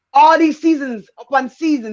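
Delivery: ordinary delivery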